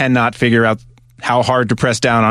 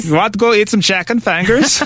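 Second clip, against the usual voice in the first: weird put-on Swedish accent, much higher pitch; 10 semitones higher than usual. Showing the accent picked up with a friend, weird Swedish accent. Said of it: "I somehow picked up this like weird Swedish accent".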